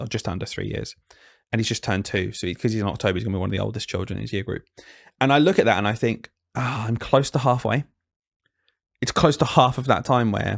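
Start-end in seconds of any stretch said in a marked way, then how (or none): 5.2-10.6 emotional voice, catching and choking up. Talking about the bond with their young child, getting emotional. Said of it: "I'm getting emotional".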